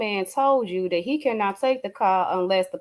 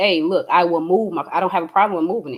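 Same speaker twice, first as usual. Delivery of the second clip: put-on steady, begging, pleading tone; 3 semitones lower, 4 dB louder than usual. Retelling the son's words from the recorded incident: imitating someone pleading. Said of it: "steady begging and pleading".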